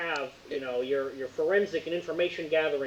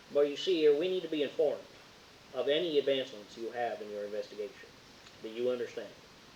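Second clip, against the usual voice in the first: put-on drawling American Southern accent; 3 semitones lower, 3 dB quieter than usual. Reading a character's lines aloud: southern drawl. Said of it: "I gotta go back to the Southern drawl".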